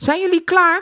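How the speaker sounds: very high, loud calling out. A skater calls to the others who are getting their skates on: calling out. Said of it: "riep Eddy".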